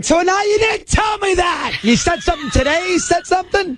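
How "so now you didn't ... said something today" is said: wild, frenzied screaming. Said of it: "you keep screaming like a crazy person".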